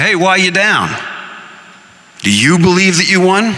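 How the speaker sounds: New York Brooklyn speech. Narrating Joe running into a sullen Bill near Brooklyn Prep, speak in Joe's Brooklynese accent. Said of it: "in his Brooklynese accent".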